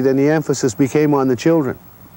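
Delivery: ordinary delivery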